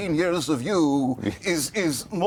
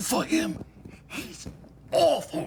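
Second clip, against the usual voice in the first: slow, hushed stage whisper; 11 semitones higher, 4 dB quieter than usual. Character apologizing for another character as the door creaks open, whispering.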